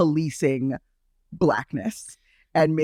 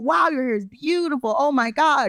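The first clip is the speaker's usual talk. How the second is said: high, gushing, admiring voice. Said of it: "they're always like".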